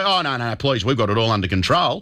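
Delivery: ordinary delivery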